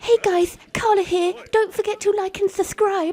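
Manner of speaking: goofy, silly, teasing put-on voice, high and loud. Retelling how the husband bursts in during recording, doing his stupid put-on voice. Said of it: "puts on this stupid voice and says".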